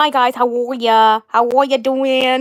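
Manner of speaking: strange doll-like voice. Describing how her doll Lucinda always talks, in a weird Lucinda accent. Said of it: "That's all she says in a weird way".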